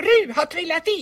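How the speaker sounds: very high, shrill, screaming shout. Narrator reads a character raising the alarm as another falls into the water, shouting. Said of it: "skrek kanin".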